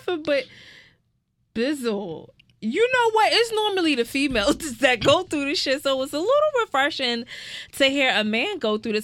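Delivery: high voice, cracking up laughing through the words. Speaker reacts to a man's story while unable to stop laughing. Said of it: "I can't stop laughing".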